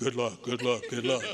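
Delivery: chorus of loud, deep, low put-on voices. Retelling what the others down the line said, imitating low voices. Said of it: "And they all had low voices".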